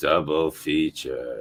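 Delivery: put-on very low, hushed, gloomy, mopey teen voice.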